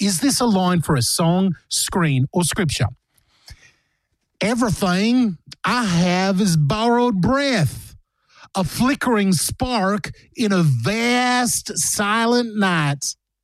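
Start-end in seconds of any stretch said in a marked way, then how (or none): 4.4-13.1 slow, terrible fake American accent. Reading a quote aloud for listeners to guess its source, bad American accent. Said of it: "one of the worst American accents I've ever heard".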